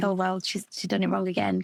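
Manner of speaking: ordinary talk, nothing marked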